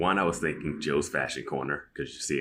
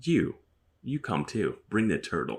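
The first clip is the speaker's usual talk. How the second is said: high, weird, sinister, creepy, flirtatious tone; 6 semitones higher than usual. Retelling a scene, quoting Caroline inviting someone along: Caroline's weird, flirtatious, creepy, sinister way. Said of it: "saying it in that weird, flirtatious, creepy, sinister way".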